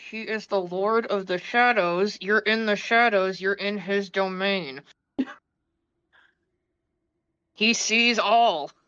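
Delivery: confiding, private sideways aside. Voicing a character who looks over at another character, under her breath. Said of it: "like under her breath be like".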